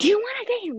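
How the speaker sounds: very high, loud, aggressive, in-your-face delivery. Retelling what another girl asked her, mock-aggressive question. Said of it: "very aggressively".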